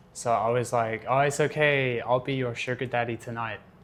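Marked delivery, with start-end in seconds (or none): 1.1-3.6 sarcastic, joking tone. Retelling own quip when a girlfriend forgot her money: imitating own sarcastic joke. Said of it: "As a joke, like, just sarcastic".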